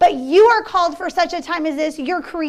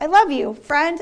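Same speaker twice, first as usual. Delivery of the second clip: usual speaking voice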